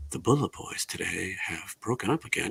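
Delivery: mock soothing asmr voice. Mocking other podcasts that read rock news: mock soothing ASMR news voice. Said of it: "they probably have A S M R where they ease you into it".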